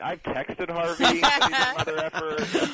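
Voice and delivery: laughing delivery.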